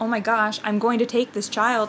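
ordinary delivery

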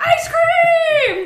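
very high, very loud, shrill drawn-out scream. Retelling running to the car as others ask where they're going, retelling a scream. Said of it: "I'm screaming".

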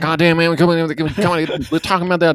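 meandering Texas drawl. Retelling a rambling complaint call, imitating Boomhauer. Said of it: "it was Boomhauer".

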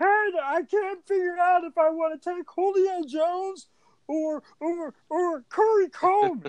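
very high, very slow, dragged-out put-on voice. Reading a friend's text about draft picks: Superstore manager voice. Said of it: "It's like the manager's voice".

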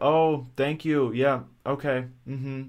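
flat, blank, empty, slow monotone. Imitating the hairdresser thanking a sweet old lady: imitating a blank way of talking. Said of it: "a really blank way of talking".

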